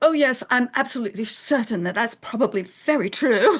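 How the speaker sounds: put-on crisp, clipped English accent. Retelling her reply to someone's claim about Southern accents, in a clipped English accent. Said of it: "my like clipped English accent".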